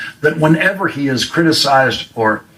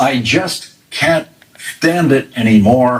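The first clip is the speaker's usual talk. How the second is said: normal talking voice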